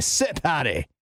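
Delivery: bad put-on Irish accent. Speaker tells how a dog listens to an accented command; horrible irish accent. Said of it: "What a horrible accent [name] just did".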